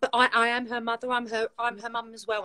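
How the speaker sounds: plain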